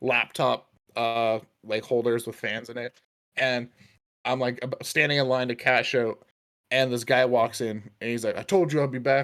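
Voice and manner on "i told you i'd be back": hard, tough, streetwise swaggering gangster voice. Retelling what a man said walking into a store, imitating a gangster. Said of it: "he's all like fucking gangster".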